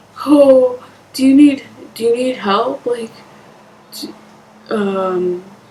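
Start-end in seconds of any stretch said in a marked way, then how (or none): 0.3-2.9 high, loud, mock demeaning, condescending concern. Retelling a date's reaction to living in a shelter: imitating a demeaning, condescending tone. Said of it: "demeaning and condescending".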